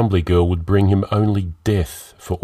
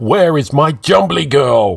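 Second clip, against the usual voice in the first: put-on old man voice, drawn-out bellowing; 7 semitones higher, 5 dB louder than usual. Narrator reads an old Englishman knocking on every door, bellowing.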